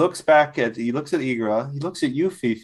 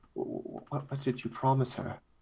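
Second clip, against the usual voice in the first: hushed, slow, sincere, worried whisper; 12 dB quieter than usual. A character reaches out with both hands, asking a question; genuine concern. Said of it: "it almost seems like genuine concern now".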